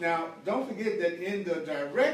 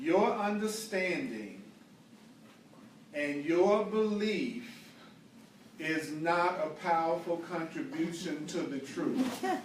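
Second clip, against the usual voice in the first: very slow, measured, deliberate, word by word. Speaker addressing listeners on a startling point, speaking very slowly. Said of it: "I'm going to say this very slowly".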